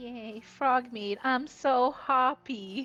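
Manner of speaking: forced, lifeless fake cheer that sounds dead. Cheering about receiving frog meat: mock cheer sounding lifeless. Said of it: "You sound like you died".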